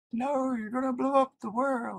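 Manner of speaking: very high, gentle, real soft little voice. Speaker retells someone's reply to a wrist tendon trick, real soft voice. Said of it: "in this real soft voice".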